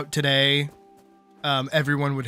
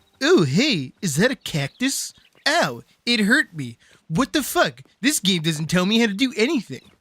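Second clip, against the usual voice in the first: put-on cartoon kid voice; 5 semitones higher than usual. Retelling a video made while hating Minecraft: Jimmy from South Park voice. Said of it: "like a cross between, like, that, that Game Grumps bit and, like, Timmy from, uh, from South Park. Not Timmy. Um, Jimmy".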